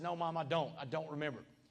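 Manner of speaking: put-on tearful voice, as if speaking through tears. Retelling answering their mom while coming off drugs, reenacting a tearful reply. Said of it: "through those tears again".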